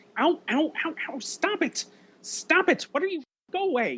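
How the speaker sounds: very high, squeaky, protesting puppet voice. Putting a voice over a monster for a couple of minutes, Muppet voice. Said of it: "putting like a Muppet voice over".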